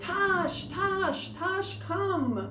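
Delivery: mock shouting, pitched way up, repeated. Retelling hurrying after a dog that went out of sight, retelling a yell. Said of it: "And I start yelling".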